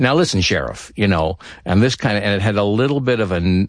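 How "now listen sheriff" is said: put-on nasal voice, higher. Recalling a screen role and doing its voice: nasal Agent Cooper voice. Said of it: "almost a nasal quality to it".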